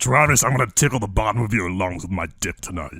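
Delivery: dumb-sounding demonic voice with vocal effects. Doing the requested voice for a friend: stupid tricky demon voice. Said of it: "In that voice".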